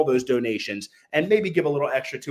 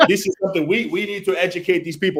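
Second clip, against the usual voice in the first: put-on speaking with Turkish accent; 5 semitones higher than usual. Retelling what Volkan said, imitating Volkan's Turkish accent. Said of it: "in his Turkish accent".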